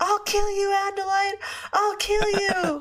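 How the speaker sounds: high, furious, threatening raging screech. Retelling how a character screams at a wounded enemy: imitating a scream. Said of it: "he just screams at her".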